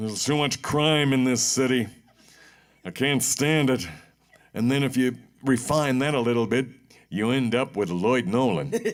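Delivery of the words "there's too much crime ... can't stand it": deep baritone voice, untrained sound. Showing how an actor with an untrained voice sounded: Sterling Hayden voice. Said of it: "he always just sounded like one of these guys".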